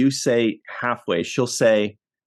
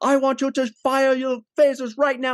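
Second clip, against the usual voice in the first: put-on angry voice, higher pitched; 14 semitones higher than usual. Retelling how Captain Picard orders the phasers fired: imitating an angry Captain Picard. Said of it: "Captain, I sense you're angry".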